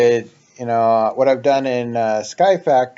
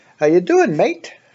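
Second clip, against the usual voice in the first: put-on Australian accent, pitched up; 7 semitones higher than usual. Speaker trying to sound British today, slipping into a put-on Australian accent. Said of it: "that's Australian".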